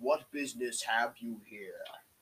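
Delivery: dragon creature voice. A game master voicing a dragon that confronts the players, in a dragon voice. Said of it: "a dragon flies down and says".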